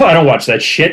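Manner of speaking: totally deadpan, matter-of-fact delivery. Retelling an interview answer from Billy Bob Thornton: imitating Billy Bob Thornton, deadpan. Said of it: "And he's deadpan, just deadpan".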